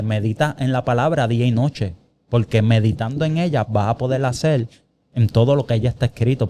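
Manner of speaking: ordinary talk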